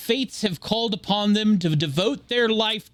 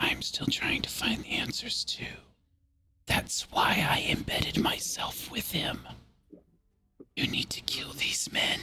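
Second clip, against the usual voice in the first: hushed, very soft whisper, very close; 3 semitones lower, 10 dB quieter than usual. Describing a scene, acting out what she whispers close to your ear: retelling her whisper. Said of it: "she whispers to you".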